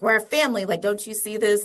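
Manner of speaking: play-acted exasperated, fed-up, frustrated outburst. Retelling how the parents reacted when people questioned their family: imitating frustrated parents. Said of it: "my parents got pretty frustrated".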